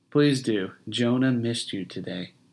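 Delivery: said tenderly and gently. A wife answers her husband as he goes to their baby, tender. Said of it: "she said tenderly".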